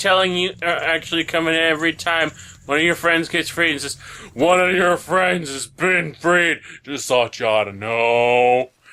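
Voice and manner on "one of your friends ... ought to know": deep voice, lower and slower. Game character coming in to tell the player news, deep voice. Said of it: "don't mind the deep voice".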